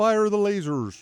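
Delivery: high cartoon frog puppet voice. Playing a game, calling out an attack: Kermit voice. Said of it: "Why did you sound like Kermit there?".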